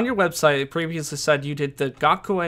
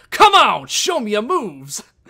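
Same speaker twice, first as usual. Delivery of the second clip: over-the-top, loud, belted, swooping hero voice; 7 semitones higher, 6 dB louder than usual. Showing someone who has never heard the game character, in an over-the-top Captain Falcon voice. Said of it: "It's a very over-the-top voice".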